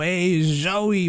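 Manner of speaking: put-on heavy New York accent. Describing a roleplay character voice that crept into everyday speech: put-on heavy new york accent. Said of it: "a little too heavy on the New York".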